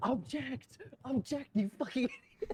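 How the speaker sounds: very high, slow, drawn-out urgent scream. Retelling how Mal urged an objection: imitating Mal whisper-screaming. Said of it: "screaming at me in whispers".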